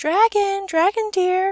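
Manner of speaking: sugary sweet, very high calling voice. Narrator reads the princess calling out to the dragon, voice sweet as honey. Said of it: "she called out in a voice as sweet as honey and sugar cane".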